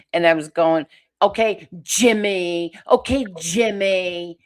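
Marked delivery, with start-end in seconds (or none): 1.2-4.2 put-on very slow, cross tone, name drawn out. Retelling own words to Jimmy while mad at him: imitating own mad tone. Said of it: "I was mad at him".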